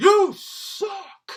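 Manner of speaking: very high, very loud, shrill, jeering scream. Retelling the father screaming at the opener after the set: imitating dad's loud scream. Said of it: "my dad screamed so loud".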